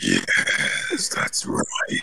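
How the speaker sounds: breathy, whispered game-narrator voice. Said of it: "the narrator for Do-, Doom".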